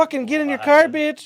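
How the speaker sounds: very high, loud, shrieking screamed outburst. Retelling a clash with a woman who kicked her car door open: retelling screaming at her. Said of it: "So I'm screaming at her".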